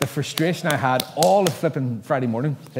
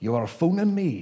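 threatening, menacing, put-on Scottish accent; 2 semitones higher than usual. Retelling a phone call from a man calling back, put-on deep menacing Scottish accent. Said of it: "this deep Scottish menacing accent".

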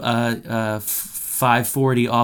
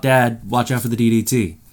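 ordinary talk, nothing marked

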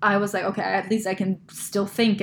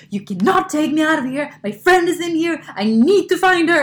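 high-pitched, furious screaming; 8 semitones higher, 7 dB louder than usual. Telling a story, the speaker re-enacts yelling at a man in a club: retelling screaming at him. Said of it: "I was like screaming at him in the middle of this club".

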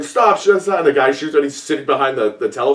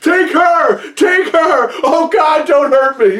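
very high, frantic, panicked shriek; 13 semitones higher, 4 dB louder than usual. Describing a scene where a man is taken, retelling a panicked scream. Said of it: "he's screaming".

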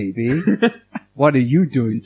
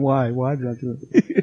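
mock crying with fake sobbing. Picturing regret over buying the console, mock crying. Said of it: "it would just be me crying, going".

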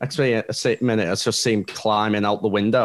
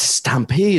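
put-on stunned cartoon-lion disbelief, higher pitched; 7 semitones higher, 4 dB louder than usual. Comparing reopened pubs to a film scene: imitating Simba in shock. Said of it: "he's just in shock".

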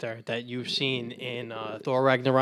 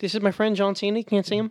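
put-on fake Canadian accent, pitched high; 8 semitones higher, 3 dB louder than usual. Among friends trading silly voices, one slips into a put-on Canadian accent. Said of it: "Why do we sound Canadian?".

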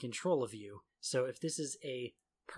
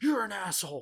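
mock, sudden, loud, high angry outburst; 7 semitones higher, 8 dB louder than usual. Recalling calm conversations that turned suddenly, the speaker acts out a sudden snap. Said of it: "one of you would suddenly just snap".

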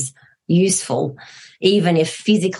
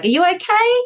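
okay said with rising pitch at the end. Contrasting an unencouraging way to ask if she is okay: rising pitch at end of okay. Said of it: "coming down at the end of your words rather than up, where you're like".

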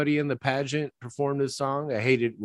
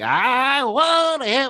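put-on kid voice, much higher, slower; 11 semitones higher, 5 dB louder than usual. Complaining about a kid's voiceover, a speaker imitates that kid voice. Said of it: "it's that kid voice".

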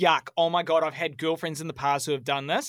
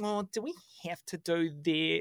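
cutesy put-on baby voice, quieter; 2 semitones higher, 5 dB quieter than usual. Imitating someone reluctant to watch a movie, cutesy baby voice. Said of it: "It's like that put on cutesy baby thing".

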